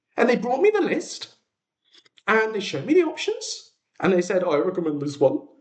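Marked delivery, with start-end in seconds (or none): 4.5-5.4 rough, best-effort put-on Danish accent. Retelling a restaurant server's wine recommendation: imitating a Danish accent. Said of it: "I don't know why I'm giving him that accent".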